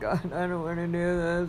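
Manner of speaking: mock crying. Recounting dreading the coming holidays: imitating own crying. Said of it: "I was literally like crying".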